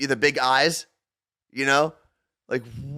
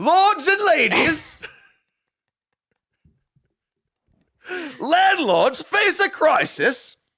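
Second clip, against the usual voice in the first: shrill attempted British accent that lands sounding Australian; 13 semitones higher than usual. Asked to read a headline in a British accent, Australian-sounding accent. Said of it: "that was Australian".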